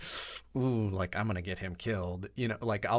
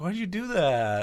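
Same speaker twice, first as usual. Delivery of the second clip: genuinely disappointed, slow, high, drawn-out; 8 semitones higher, 5 dB louder than usual. Retelling what one of the guys asked: imitating someone genuinely disappointed. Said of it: "He sounded so, like, genuinely disappointed".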